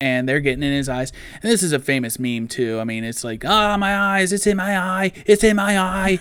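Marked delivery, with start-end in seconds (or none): 3.4-6.2 full-on screaming, pitched high. Retelling a famous movie meme scene with bees: imitating Nick Cage screaming. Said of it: "he's just going full on Nick Cage".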